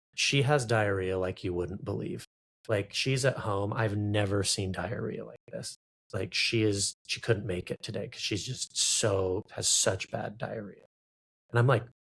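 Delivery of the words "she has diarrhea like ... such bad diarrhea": usual speaking voice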